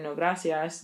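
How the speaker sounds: usual speaking voice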